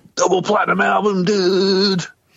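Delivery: high, excited rock star voice.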